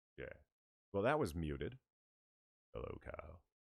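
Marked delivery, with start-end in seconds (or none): 2.8-3.4 low, hushed, suave voice. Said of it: "That's my suave voice".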